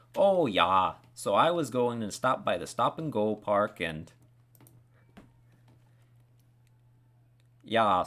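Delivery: put-on loud regional American accent. Speaker imitating an aunt back home, in the aunt's regional American accent. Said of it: "my aunt who still lives there speaks exactly like".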